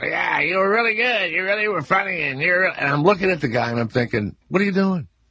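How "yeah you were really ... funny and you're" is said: high, cartoon-style duck puppet voice. Retelling how the nervous guy's puppet spoke to the speaker, in Willard the duck voice. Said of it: "in the duck voice".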